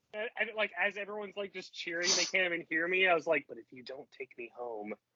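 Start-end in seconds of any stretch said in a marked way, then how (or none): 3.4-4.9 mock muttering under breath, lower and quieter. Retelling a threat made while everyone was cheering: line said under the breath. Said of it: "almost under my breath".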